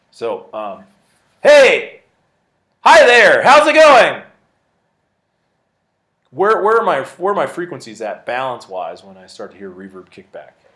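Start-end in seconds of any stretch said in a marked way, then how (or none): 1.4-9.7 very loud voice, louder. Showing students room reverb by speaking very loudly: demonstrating speaking very loudly. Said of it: "I'm gonna get really loud".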